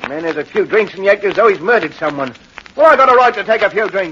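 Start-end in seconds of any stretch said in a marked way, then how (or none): 2.8-4.1 loud yelling shout. A man home at 12:30 answers a woman saying he's been drinking, shouting. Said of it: "Stop shouting".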